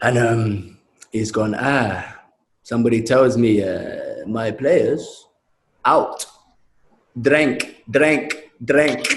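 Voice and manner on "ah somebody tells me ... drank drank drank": slow, deliberate, drawn-out, repeated delivery. Retelling the manager announcing players went out drinking: imitating Paolo. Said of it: "He used to do that for the drink".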